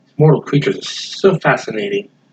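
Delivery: muttering to himself under the breath. Voicing a character muttering as he walks out the door: muttering to himself. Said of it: "it sounds like he's muttering something".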